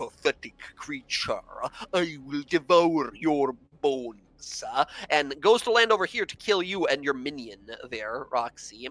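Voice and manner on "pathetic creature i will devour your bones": contemptuous, scoffing, sneering monster voice. Voicing a giant who scoffs at a small demonic minion: scoffing giant voice.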